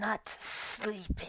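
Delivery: rough gravelly voice. Voicing a character who replies to Aria's apology, in a gravelly voice. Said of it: "you hear a gravelly voice".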